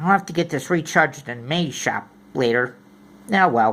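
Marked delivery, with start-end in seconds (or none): none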